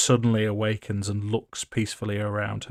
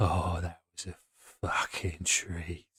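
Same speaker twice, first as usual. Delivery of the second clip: purring the words with pure enjoyment and relish; 4 semitones lower, 8 dB quieter than usual. Voicing Mad Maggie, who is enjoying herself: Mad Maggie almost purring. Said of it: "you can hear Mad Maggie almost purring".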